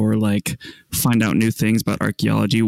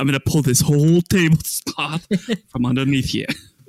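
put-on terrible New York accent, pitched higher; 4 semitones higher than usual. Joking about a magic trick with a tablecloth: terrible Donald Trump impression. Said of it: "a terrible New York accent, but that's Donald Trump".

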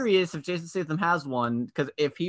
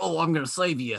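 gruff voice with an Australian accent. Imagining a film hero's line: gruff Australian Jason Statham voice. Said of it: "gruff and Australian".

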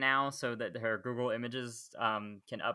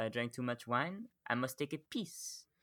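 put-on French villain accent, much quieter; 6 dB quieter than usual. Joking about how a character talks, doing a Merovingian impression. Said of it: "The way he says piss".

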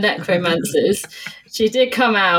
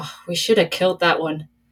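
muttered under the breath. A player voices Groner reacting to a halfling in the doorway, muttering under her breath. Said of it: "say under her breath".

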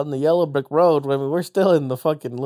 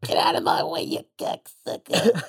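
slow, drawn-out, rough chain-smoker voice; 3 dB quieter than usual. Joking that a cartoon character is a chain smoker: chain-smoking Betty Boop voice. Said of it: "'cause she's like a chain smoker. Like".

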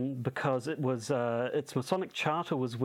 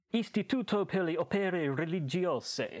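high, full, put-on Italian accent; 5 semitones higher than usual. Podcaster saying the Vatican bank's official Italian name, in an Italian accent. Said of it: "what an Italian accent you do".

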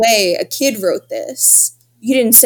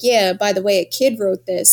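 mock-deadpan, put-on flat delivery. Retelling what Pat said about who wrote it, imitating Pat's deadpan. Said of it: "And Pat's so deadpan".

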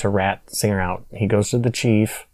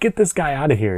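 mock yelling in a police chief voice; 4 semitones higher than usual. Retelling how the police chief threw a visitor out, imitating the chief yelling. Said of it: "yelling at me".

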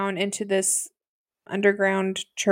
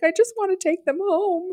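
put-on tearful crying voice, higher; 10 semitones higher than usual. Retelling a tearful interview: imitating someone crying.

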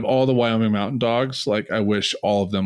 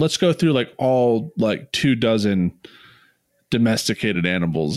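usual speaking voice

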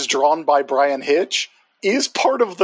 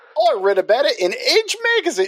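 brief slide into Australian accent, slightly pitched up; 9 semitones higher than usual. In conversation, slipping briefly into an Australian accent. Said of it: "That went Australian for a little bit".

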